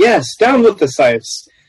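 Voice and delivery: loud shouting, calling out. A player joins a cheering, shouting crowd in the game, shouting out. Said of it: "I'm going to start shouting out".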